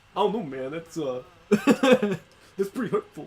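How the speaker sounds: loud, slow, high, booming showy voice. Imagining a celebrity reacting to the podcast: John Travolta impression. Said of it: "That's my John Travolta impression".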